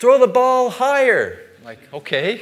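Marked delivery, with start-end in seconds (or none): 0.0-1.4 very loud, high, shrill, booming coach yell. Telling how the coach yelled after bad throws, imitating the coach yelling. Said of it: "the coach would yell out".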